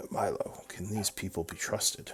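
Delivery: private, confiding voice. Narrating a game, voicing one of milo's two buddies, in a lowered voice. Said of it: "they kind of lower their voices".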